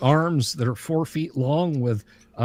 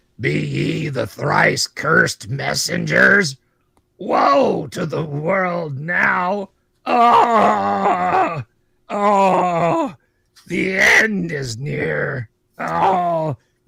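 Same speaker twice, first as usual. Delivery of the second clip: rough, creaky, gravelly, sobbing, wailing lament; 3 semitones higher, 4 dB louder than usual. A legless creature rising from rags at a cave entrance speaks: gravelly lamenting voice. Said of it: "And it says in a gravelly voice".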